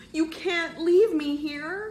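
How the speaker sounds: very high, loud, drawn-out protesting tone. As his friends want to get out, [name] protests; protesting. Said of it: "[name] protested".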